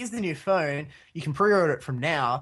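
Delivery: normal talking voice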